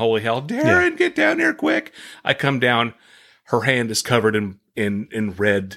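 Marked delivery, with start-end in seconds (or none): 0.0-1.9 mock frantic shrill yell climbing ever higher. Retelling how a woman called him down from upstairs, imitating her screaming. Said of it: "she starts screaming".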